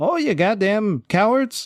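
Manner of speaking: shrill, very high, furious, angry cry. Telling a bar-fight story, imitating the bartender. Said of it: "you hear the bartender".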